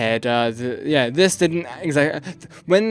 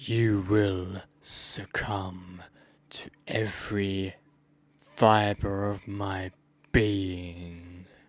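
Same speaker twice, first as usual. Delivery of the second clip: creepy, low, hushed, drawn-out demon voice; 6 semitones lower, 8 dB quieter than usual. Showing the raw recording of your demonic voice: demonic voice. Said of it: "this is how my demonic voice sounds like".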